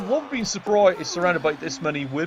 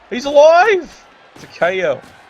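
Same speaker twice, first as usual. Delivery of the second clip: very loud, higher and louder; 8 semitones higher, 11 dB louder than usual. Calling a knockout in the game, way too loud. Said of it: "it's coming out way too loud".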